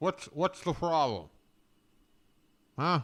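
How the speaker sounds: put-on side-of-mouth talking. Mocking another speaker eating pie, imitating talking out of the side of the mouth. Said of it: "out of the side of his mouth like this".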